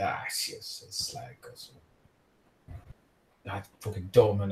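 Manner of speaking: mock mumbling under breath. Retelling how a man walked off after taking a seat, retelling a mumble under breath. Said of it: "mumbles sort of so slightly like under his breath".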